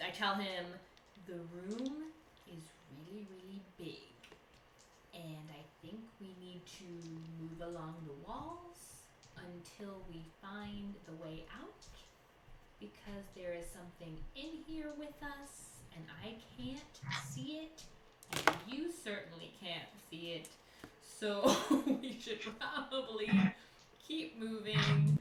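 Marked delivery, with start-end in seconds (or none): 1.3-17.8 soft, hushed whisper, as quiet as possible. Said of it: "so I am going to whisper".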